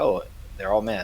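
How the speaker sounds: usual speaking voice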